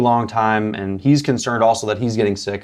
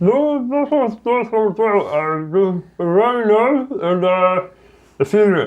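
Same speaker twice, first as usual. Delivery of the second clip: abnormal-sounding put-on voice; 11 semitones higher than usual. Playing a patient answering a doctor's questions about his throat, abnormal-sounding patient voice. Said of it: "do you always sound like this when you talk?".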